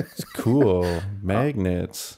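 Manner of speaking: put-on sarcastic tone. Retelling own earlier reply to a message: imitating own sarcastic tone. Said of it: "the sarcasm that I was putting on that".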